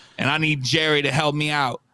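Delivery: over-the-top put-on affected voice.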